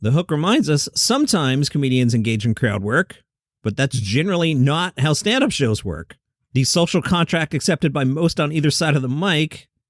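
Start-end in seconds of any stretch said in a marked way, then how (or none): none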